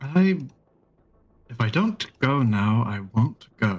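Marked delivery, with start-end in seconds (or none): 1.5-3.8 said very pointedly. Speaking in character about facing a problem: said very pointedly. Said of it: "he says that very pointedly".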